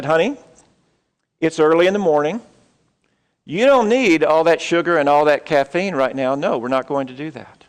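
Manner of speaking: very calm, even tone. Telling of a crying boy, speaker quotes his mom, imitating her calm voice. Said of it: "his mom very calmly said".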